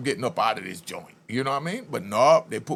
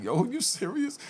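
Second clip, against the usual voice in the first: put-on, very high, hysterical laughing disbelief; 11 semitones higher, 4 dB quieter than usual. Retelling his reply to the counselor: imitating his own hysterical laughing. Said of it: "I started laughing hysterically".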